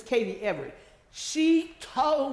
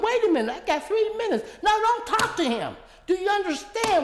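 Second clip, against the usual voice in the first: very high, shrill, protesting scream; 10 semitones higher, 4 dB louder than usual. Retelling a meeting where she stopped someone talking to her councilman: imitating own screaming. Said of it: "And I started screaming".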